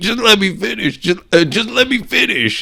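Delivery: very high pitch, fed-up, irritated pleading tone. Retelling a man who keeps getting interrupted while speaking: imitating Balboa getting pissed. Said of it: "he's like getting pissed".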